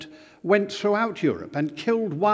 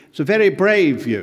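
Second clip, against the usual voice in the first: ordinary delivery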